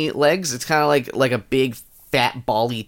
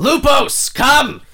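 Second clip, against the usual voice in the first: very high, loud, shouted yelling; 12 semitones higher, 5 dB louder than usual. Refused cooperation, he gives up and yells out a summons, yelling. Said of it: "And he yells out".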